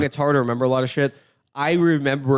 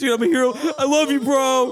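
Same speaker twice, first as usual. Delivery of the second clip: emotional, high, tearful, crying gush; 12 semitones higher than usual. Retelling feeling like a hero: imitating his own emotional crying voice. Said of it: "I just got super emotional".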